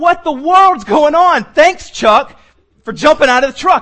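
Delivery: put-on angry voice. Retelling reacting to chuck jumping from the moving truck: retelling being mad. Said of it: "And I'm mad".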